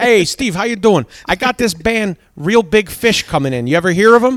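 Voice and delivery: put-on Pennsylvania accent. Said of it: "this strong Pennsylvania accent".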